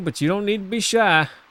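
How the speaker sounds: put-on Southern accent switched on. Voicing the good old folks in the game: southern accent. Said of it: "I'm turning on the southern accent for these".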